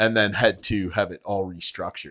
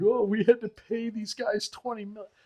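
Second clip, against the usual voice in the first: very high, shrill, whiny fake crying; 13 semitones higher, 4 dB quieter than usual. Mocking team owners who complain about paying players: mock crying.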